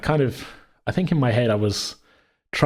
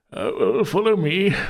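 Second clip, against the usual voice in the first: put-on slow, drawn-out, high-pitched old man voice; 9 semitones higher than usual. Retelling an old man NPC leading players in a game: old man voice. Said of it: "you do a very good old man accent".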